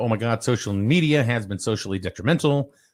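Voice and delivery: ordinary talk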